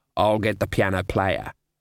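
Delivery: ordinary delivery, nothing marked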